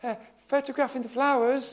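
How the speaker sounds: unusually high, out-of-character voice. Answering a bloke who asks what you're doing, uncharacteristically high voice. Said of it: "in an uncharacteristically high voice".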